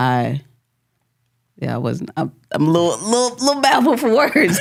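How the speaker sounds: fighting back tears. Telling someone they helped lead back to the Lord, holding back tears. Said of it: "I'm trying to hold these tears in".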